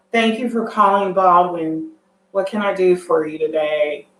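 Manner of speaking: bored, lifeless, flat monotone with no inflection. Showing how not to answer the school's phone, bored monotone. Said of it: "you're not going to be monotone".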